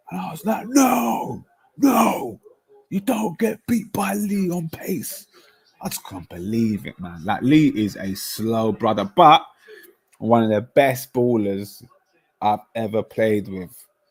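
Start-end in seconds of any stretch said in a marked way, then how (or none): 0.6-5.2 mock vein-popping furious yell, very high, drawn out. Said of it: "you're gonna burst the blood vessel".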